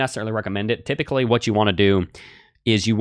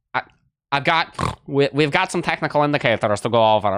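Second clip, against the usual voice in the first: weird put-on stuck-up nerd voice, higher pitch; 5 semitones higher than usual. Asked to sound technical, the speaker mocks it with a weird stuck-up nerd voice. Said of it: "Sound like some like weird stuck-up nerd".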